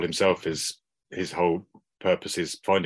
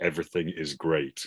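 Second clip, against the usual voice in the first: mock deadpan delivery, quieter; 4 dB quieter than usual. Recapping a show scene, quoting Joel's reply to Ellie, imitating Joel's deadpan. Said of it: "his deadpan reaction".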